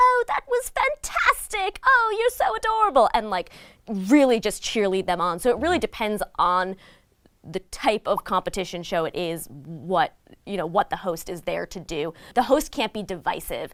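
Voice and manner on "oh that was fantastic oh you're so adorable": put-on very high, cheerleading British accent. Describing how a TV host cheers on contestants, Cat Deeley British accent. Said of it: "in her beautiful British accent".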